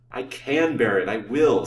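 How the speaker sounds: firm, steady delivery. Lancelot answers the banker, who doubts he can bear it: firmly. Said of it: "said Lancelot firmly".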